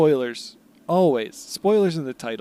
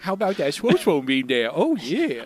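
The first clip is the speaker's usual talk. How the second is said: put-on goofy man-child baby talk, swooping and sing-song. Joining a silly bit, the speaker delivers the line in an Adam Sandler baby voice. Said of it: "so good at baby voice Adam Sandler".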